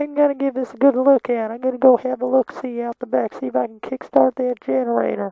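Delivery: very high, snickety little way of talking. Imitating how a man talked, in his snickety little voice. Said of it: "that was kind of how he talked".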